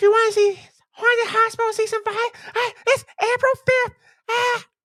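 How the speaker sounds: very high-pitched voice, numb-mouthed articulation. Speaker tells co-hosts when a show's new season starts; Mick McGee voice. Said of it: "doing my Mick McGee voice".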